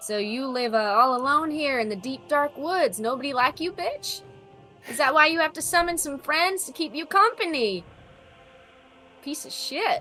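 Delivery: mocking, taunting character voice. Voicing a character taunting an enemy in the woods: taunting in character. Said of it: "This is a taunt".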